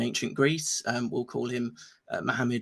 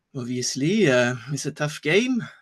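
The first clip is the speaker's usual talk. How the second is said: put-on vague, generic European accent, slow; 3 dB louder than usual. Retelling a reply to a waitress in a restaurant, in a generic European accent. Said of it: "doing this generic uh, European accent".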